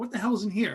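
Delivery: ordinary delivery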